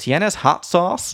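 put-on Spanish with an American accent. Retelling what a girl behind the speaker asked in spanish: american accent speaking spanish. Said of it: "the American accent was like so clear".

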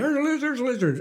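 play-acted, high screaming cry, repeated over and over. Retelling how she spotted a lizard outside: imitating someone screaming. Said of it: "she starts screaming".

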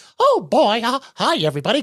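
high cartoon mouse voice. Retelling sitting with the kids on the couch: Mickey Mouse voice. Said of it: "I'd be like Mickey Mouse and Donald Duck".

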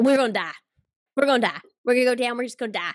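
imitated Southern accent. Retelling what a panicking family said on Splash Mountain, imitating a Southern accent. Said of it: "I can do the accent".

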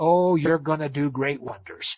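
dry, mocking, scornful sarcasm. Retelling what the mother said about becoming an artist: imitating a sarcastic remark. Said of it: "she says sarcastically".

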